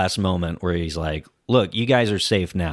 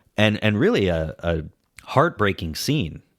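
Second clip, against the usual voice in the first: plain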